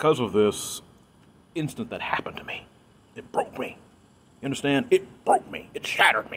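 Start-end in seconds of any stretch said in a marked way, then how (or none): 1.5-6.4 excited, breathy, each word pounded with emphasis. Recounting an incident that broke the speaker, excited and emphatic. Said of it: "Excuse me being a little excited here".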